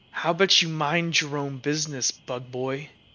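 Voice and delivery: growly, growled delivery. Voicing a character who turns to Finacrio: growling. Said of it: "she's gonna kinda growl at him".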